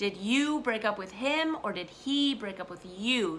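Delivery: pronouns you, him, he strongly stressed. Teaching who did what to whom, stress on the pronouns you, him, he. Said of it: "Do you see how I'm stressing the pronouns".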